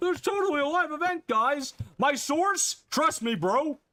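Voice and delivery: very high, loud mock hype-bro voice.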